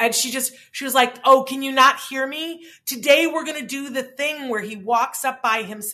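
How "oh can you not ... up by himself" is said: loud shouting yell. Retelling what a woman said at the gate in front of the parents, imitating her yelling. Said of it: "and she's yelling it".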